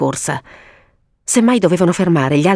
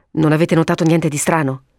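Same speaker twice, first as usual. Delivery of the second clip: ordinary delivery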